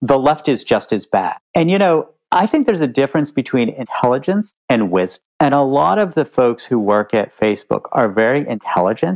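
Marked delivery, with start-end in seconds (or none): 0.0-1.4 mock put-out, pissy, irritated retort. Retelling a dinner argument over fact-checking: imitating Mark Zuckerberg's pissy voice. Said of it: "in the most pissy possible voice goes".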